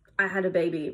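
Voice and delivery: ordinary talk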